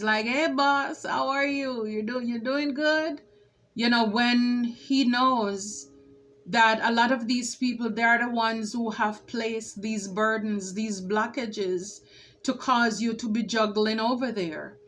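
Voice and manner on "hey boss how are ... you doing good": phony, mocking, sarcastic, fake-friendly tone. Reading a tarot card, voicing its figure greeting the boss: imitating a sarcastic greeting. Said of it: "look at him with the sarcasm".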